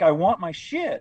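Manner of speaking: acted heated shouting. Retelling an armed man's demand, imitating a man yelling. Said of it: "they're yelling at each other".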